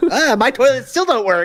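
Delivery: put-on mocking voice, high-pitched. Imitating a guy who criticized the other speaker, in a mocking high-pitched voice. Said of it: "doing high pitched voice".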